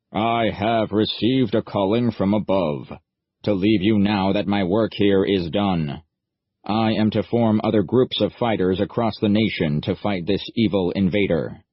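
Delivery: belting it out loudly in a monotone. Reading a character's grand farewell speech aloud: belting it out in a monotone. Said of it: "belting it out in a monotone voice".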